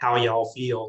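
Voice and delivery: put-on light, slight Southern accent, drawled. Retelling the question they asked their units: little Southern drawl. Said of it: "in a little Southern drawl".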